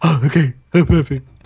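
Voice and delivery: eerie, sinister, creepy, unsettling delivery. The speaker repeats the other speaker's words back to them: mocking creepy voice. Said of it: "It's very creepy".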